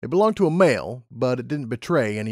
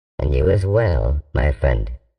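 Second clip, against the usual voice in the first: put-on computer voice, much lower, louder; 9 semitones lower, 4 dB louder than usual. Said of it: "The computer in there is called [name]".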